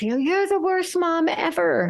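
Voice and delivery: acted-out sudden, high, furious outburst. Retelling a daughter's reply when told to do chores: imitating a furious outburst. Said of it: "she loses her mind and says".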